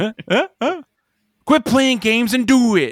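put-on angry voice. Retelling a movie scene, imitating the character Reuben: pissed-off Reuben voice. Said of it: "Ruben's just, like, pissed off, like".

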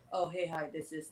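dead-flat, very hushed, low monotone drone. Contrasting two voiceover styles, showing the monotone one. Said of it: "If you're monotone".

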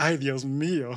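over-the-top, super caricatured cartoonish outburst. Retelling a reaction, playing it super caricaturish: super caricatured exclamation. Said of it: "super caricaturish and be like".

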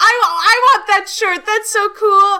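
very high, loud, excited gushing. Retelling what a young girl at Pride said about the shirt: imitating a very excited girl. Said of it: "very, very excited".

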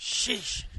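yelling. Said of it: "Stop yelling at me".

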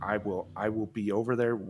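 ordinary delivery

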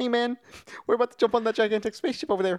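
very high, loud, offhand character voice calling out. Recalling a funny film scene: Korg voice. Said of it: "'cause Taika Waititi's voice".

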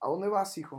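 imitated calm voice. Recalling his mother at his bedroom door asking where he's going: imitating a calm voice. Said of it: "con voz tranquila".

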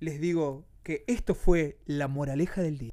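very low, deep radio announcer-style delivery. Host closing the day's program for the audience, in an announcer voice. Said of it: "así con voz de locutor".

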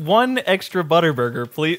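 acted-out giggling, can't keep straight, polite tone. Retelling ordering from the teenagers at the counter: imitating own laughing order. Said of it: "laughing the entire time".

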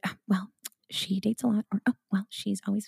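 hushed, gossipy whisper. Recalling how people in her town gossiped about her, imitating their gossiping whispers. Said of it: "Do they only whisper in your town?".

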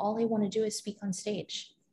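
soft, tearful, acted-out voice, spoken through tears. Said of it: "in my tears".

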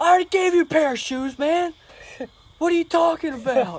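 shrill, loud, high-pitched yelling. Recalling how he would yell at people, imitating someone yelling. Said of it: "literally would yell at people like".

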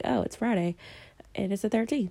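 plain

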